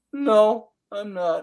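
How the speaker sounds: acted sheepish, meek voice. Retelling answering a parking warden: retelling a sheepish reply. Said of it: "very sheepishly".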